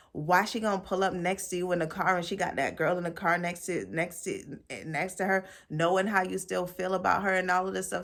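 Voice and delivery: plain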